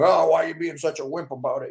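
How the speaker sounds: snide, mocking smart-aleck voice.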